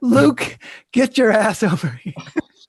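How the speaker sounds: high-pitched, loud yelling.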